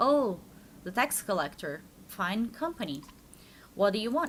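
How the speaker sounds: ordinary talk, nothing marked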